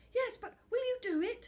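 very high, urgent, begging plea. Being let out near the supermarket, the footballer begs for an answer, begging. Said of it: "begged [name]".

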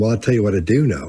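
imitated condescending tone. Describing how a woman speaks, mimicking her dominant, talking-to-a-child tone. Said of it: "that dominant tone of voice you use when you're talking to a child".

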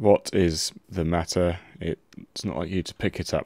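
very low, very quiet, hushed, gloomy, depressed murmur. Reading a game character's line aloud during play, the speaker uses most depressed voice. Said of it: "It's the most depressed voice I could muster".

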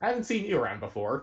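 put-on mean girl voice. Joking about origami class snobbery, acting out a scene: Regina George voice. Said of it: "Regina George is just like".

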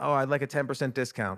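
ordinary delivery

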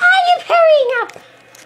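high-pitched voice. Voicing Bob answering that he is hurrying up: high voice. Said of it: "Why is your voice so high?".

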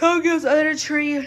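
out of breath, panting. Showing viewers gifts under the tree after running up steps, out of breath. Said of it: "I'm out of breath".

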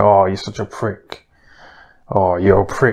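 put-on cheesy, corny Essex accent, laid on. Mocking how two pretend friends insult each other: Eddie Hearn impression. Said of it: "Eddie Hearn will say".

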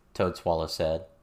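ordinary delivery

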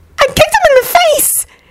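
very high, rushed, hurried alarmed blurt. Narrator voicing a woman answering a man's question: high, alarmed, hurried voice. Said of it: "she said hurriedly in a high, obviously alarmed voice".

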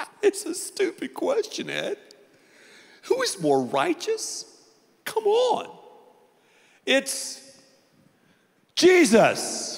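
dismissive scoff, very high-pitched and very slow. Retelling what some listeners think of the question: imitating a scoffing crowd member. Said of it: "some of you in a crowd this size are going".

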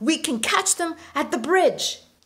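high, loud yelling. A mother shouts to the other parents running along the river, yelling. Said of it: "yelled Sierra's mom".

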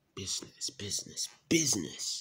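business repeated in a whisper, each one stressed. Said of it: "I know you're trying to emphasize the word business".

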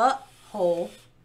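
very slow, drawn-out, deliberate, careful pronunciation. Showing how friends mocked a word, saying it real slow. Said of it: "I'm gonna say it real slow".

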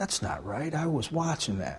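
soft, meek, powerless-sounding little voice. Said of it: "Like, powerlessly".

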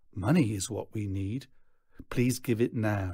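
ordinary delivery, nothing marked

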